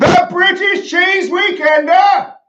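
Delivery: full-throated shout, very high-pitched and loud. Asked to say the event name louder, the guest repeats it, shouting. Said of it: "I think I've woken my children".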